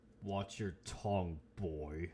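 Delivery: deepened voice. Voicing a vampire warning a player character: deepened voice. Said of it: "his voice deepens even more".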